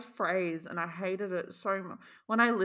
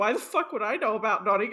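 normal talking voice

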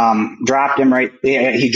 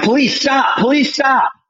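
mock very high, hard yelling; 12 semitones higher than usual. Retelling backing away from a man with arm raised, re-enacting a yell. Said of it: "and I'm yelling".

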